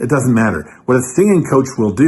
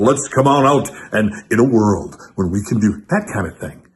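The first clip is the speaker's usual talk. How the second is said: big radio DJ voice, much lower pitch; 3 semitones lower than usual. Explaining how they mimicked radio DJs, the speaker does a big radio DJ voice. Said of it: "Big radio jock balls voice".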